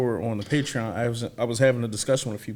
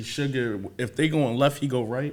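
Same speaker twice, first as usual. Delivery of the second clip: normal talking voice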